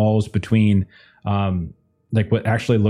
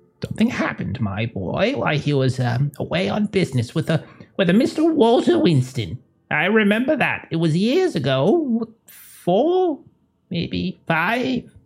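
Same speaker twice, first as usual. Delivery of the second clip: woman in her eighties, very high, swooping pitch; 9 semitones higher than usual. In a role-play, an elderly character recalls past events: older woman in her 80s. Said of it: "She's older woman in her 80s".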